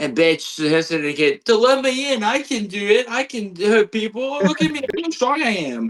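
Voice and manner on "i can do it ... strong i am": pitched-up whine. Mocking a wrestler's promos as moaning and complaining: mocking MJF moaning. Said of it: "listen to M J F moan and complain".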